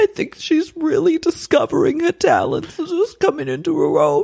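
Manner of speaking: very high, swooping, tearful sobbing voice. Retelling a mother's words about her daughter, imitating someone weeping.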